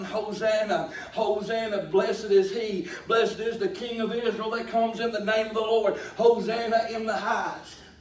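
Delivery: ordinary delivery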